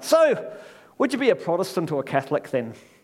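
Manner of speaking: rough, poor attempt at an Irish brogue. Telling a joke about locals in an irish pub: attempted irish accent. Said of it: "I can't do an Irish accent".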